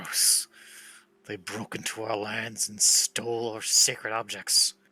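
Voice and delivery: slow, slightly growling snarl. Voicing a character asked about the Muros folk: snarling a little. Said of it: "He snarls a little".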